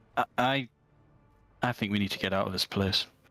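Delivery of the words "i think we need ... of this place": confiding, private aside. In character, urging a companion to leave this place: said very quietly. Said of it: "I'll say that very quietly to Klim".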